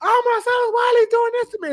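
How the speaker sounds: shrill yell, pitched very high. Retelling how the girl yelled inside the house: imitating a woman yelling. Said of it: "The girl breaking up his house yelling".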